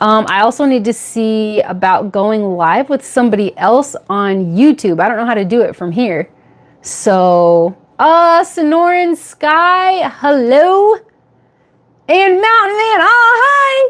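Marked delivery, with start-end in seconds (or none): 8.4-13.9 loud excited drawn-out yell, rising, pitched up. Live on YouTube, greeting chat viewers by name, yelling. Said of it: "I'm yelling again".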